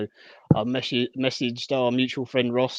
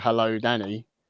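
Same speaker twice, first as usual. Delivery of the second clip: ordinary talk, nothing marked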